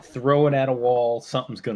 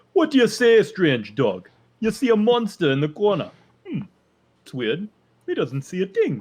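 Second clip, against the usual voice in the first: put-on Jamaican accent, dry, high, swooping, sing-song; 8 semitones higher, 4 dB louder than usual. Voicing Grim over there in the corner, trying Grim's Jamaican accent. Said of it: "I don't know if I can even do a Grim accent".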